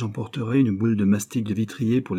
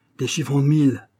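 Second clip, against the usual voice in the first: stammering, strangled, choked voice, higher; 5 semitones higher, 4 dB louder than usual. Chupin, shown the banknotes, answers the man holding them, stammering in a strangled voice. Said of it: "bégaya-t-il d'une voix étranglée par la convoitise".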